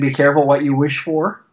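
normal talking voice

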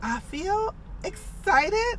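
unsure-sounding statement with rising, question-like ending. Retelling a woman's reply when asked how she feels, imitating a questioning upturn. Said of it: "she had kind of like that question mark at the end".

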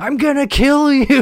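very high, shrill, stretched, drawn-out scream. Retelling how a neighbor would go into his yard: imitating someone screaming. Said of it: "just start screaming".

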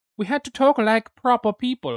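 clumsy fake posh British accent, high and loud. Speaker recalls having to talk properly, in a bad british accent. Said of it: "That was not British".

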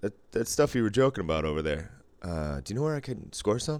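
plain

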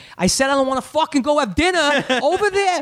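put-on furious, high, angry yell in r-dropping accent. Showing how his accent returns when yelling at his girlfriend: yelling, accent coming back. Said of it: "it comes back".

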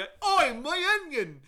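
put-on very loud, very high, drawn-out accented yell. Describing a crowd scene, the speaker imitates a background extra, retelling an accented yell. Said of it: "someone's just in the background going".

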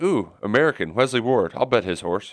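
ordinary delivery

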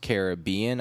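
Caribbean with stress on the second syllable. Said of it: "the stress on the second syllable".

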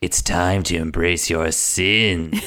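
slow, drawn-out, tempting, sinister, seductive put-on villain drawl. Retelling playing Lucifer and hitting on everyone, in a put-on seductive Lucifer voice. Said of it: "i was talking in a voice like this".

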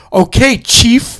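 slow, drawn-out snide delivery. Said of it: "that one word that you say when someone talks down".

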